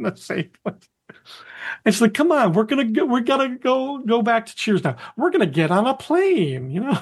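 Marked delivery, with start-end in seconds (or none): 2.1-6.7 put-on patronizing voice, higher and slower. Retelling a scene, speaker quotes Carla, mimicking Carla's patronizing voice. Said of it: "Carla gives him this really patronizing voice".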